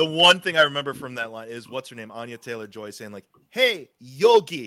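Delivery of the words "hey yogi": clumsy, bad put-on Russian accent, raised pitch. Recall a movie line for the others, imitating Anya Taylor-Joy's bad Russian accent. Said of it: "in her bad like Russian accent".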